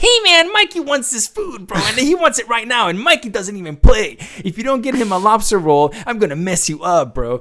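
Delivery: high-pitched, loud, squeaky bully voice. Speaker imagines a voice for a game character, Bruce high-pitched voice. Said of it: "I can just totally see Bruce having this like high pitched voice".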